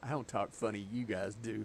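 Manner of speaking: ordinary talk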